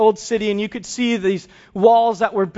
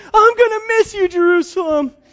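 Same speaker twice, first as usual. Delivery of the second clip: put-on very high sobbing wail like a bawling child; 10 semitones higher, 3 dB louder than usual. Retelling a son's tearful goodbye to the city: imitating a child bawling. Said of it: "he just starts bawling".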